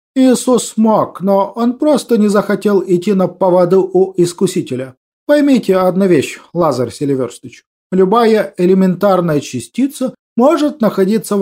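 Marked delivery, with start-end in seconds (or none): none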